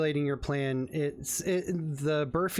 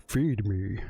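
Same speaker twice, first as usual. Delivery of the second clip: voice of a strange robot-like lizard creature; 7 semitones lower than usual. Voicing the Burfy as it observes a player with robotic eyes: Burfy voice. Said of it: "and it goes".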